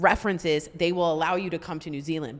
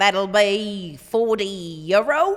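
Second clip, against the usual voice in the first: raised, played-up, put-on New Zealand accent; 3 semitones higher, 6 dB louder than usual. Retelling the mother-in-law's doctor visit in New Zealand, quoting the clinic: New Zealand accent. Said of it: "here's my New Zealand accent".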